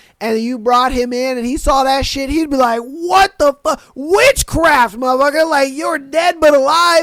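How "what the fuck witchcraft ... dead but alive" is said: pitched-up, freaked-out outburst in total disbelief. Acting out a man from the olden days seeing modern surgery: imitating a man freaking out. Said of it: "he would flip the fuck out".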